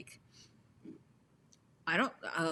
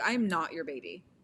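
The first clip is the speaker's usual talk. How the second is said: ordinary talk, nothing marked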